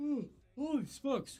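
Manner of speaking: high exclamation stretched through a yawn. Presenting a vintage card for auction, talking mid-yawn: yawning. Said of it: "I don't know why I'm yawning".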